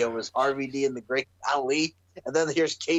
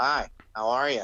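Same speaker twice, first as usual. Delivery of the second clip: slow, drab, lifeless, dead boring voice; 2 semitones lower than usual. Comparing a wrestler to Squidward after getting knocked out: boring Squidward voice. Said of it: "he's friggin' changed and he's all boring".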